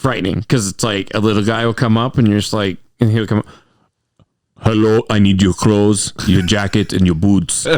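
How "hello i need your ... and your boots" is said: put-on Austrian accent in action-hero style. Imitating a little Austrian guy walking up: Arnold Schwarzenegger Austrian accent. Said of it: "'cause it's that accent".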